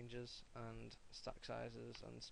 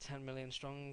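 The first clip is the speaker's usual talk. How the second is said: ordinary talk, nothing marked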